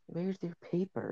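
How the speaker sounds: very quiet, soft, high half-whisper. Retelling what she half-whispered to him after he sat down silently: retelling a half-whisper. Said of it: "she like whispered to him".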